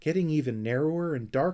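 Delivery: ordinary delivery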